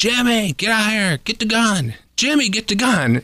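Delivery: play-acted, high-pitched, urgent yell. Speaker retells a driver yelling out his window about a raccoon: retelling a yell. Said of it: "he's yelling out his window".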